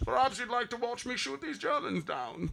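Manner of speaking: very high, very quiet, tiny voice, as if masked. Quoting a movie character's line while talking about the film, in a Bane voice. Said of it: "he was doing his Bane voice with his mask".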